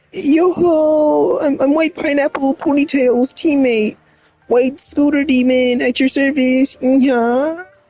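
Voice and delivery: airy, feather-light, very high floaty voice. Reading a game character's introduction aloud: light, floaty voice. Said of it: "Light, floaty voice".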